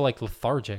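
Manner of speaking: plain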